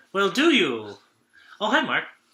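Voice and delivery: high, swooping, odd line reading, pushed up and swinging. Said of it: "the Tommy Wiseau version of, uh, Dirty Harry".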